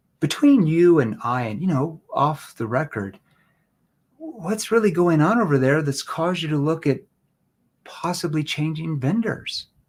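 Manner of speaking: concerned, worried-sounding tone. Showing how to ask a prospect a question: concerned tone. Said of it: "Concern tone".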